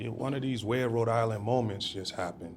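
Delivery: ordinary talk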